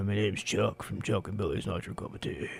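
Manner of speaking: cool, deep radio dj voice. Speaker whose voice is nearly gone jokes that he sounds like a radio host: deep radio host voice. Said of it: "a cooler radio host, with a deeper voice".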